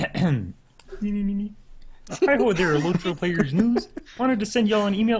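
very high, loud, frog-like voice. Reading an email to Lotro Players News aloud on request, Kermit voice. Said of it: "could [name] read this in Kermit's voice?".

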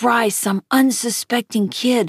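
ordinary delivery, nothing marked

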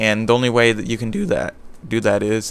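voice breaking. Giving game perk advice, voice cracking. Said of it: "my voice cracks so much".

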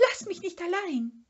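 very high, shrill scream. A narrator reads Schnüfferl calling after Mumin as he runs off: screaming. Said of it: "schrie das Schnüfferl".

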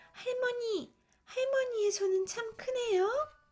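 crying out in alarm. A girl in bed beside the wolf posing as grandmother, startled cry. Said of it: "깜짝 놀라 소리쳤죠".

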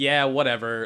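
ordinary delivery

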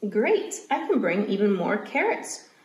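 ordinary talk

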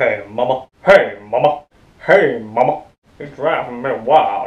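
hunky cartoon ladies' man voice, words drawn out. Speaker tries out a cartoon impression, in a Johnny Bravo voice. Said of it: "I thought I could do Johnny Bravo".

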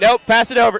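high, very loud yelling call. Calling out to players during a dodgeball game: yelling. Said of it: "I'm yelling".

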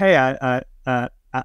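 ordinary talk

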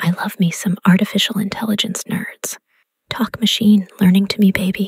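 soft whisper. Demonstrating a flirty line requested from a voice generator: whispering. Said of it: "in a voice that's whispering".

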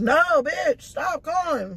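high, slow, drawn-out mock annoyed voice.

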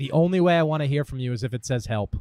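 ordinary talk

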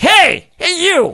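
very high-pitched goblin voice calling out. Voicing a goblin in a kitchen calling out to a player: goblin calling out. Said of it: "one of the goblins calls out to you".

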